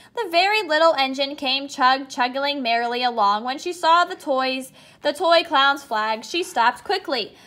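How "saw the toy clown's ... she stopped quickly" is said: ordinary delivery, nothing marked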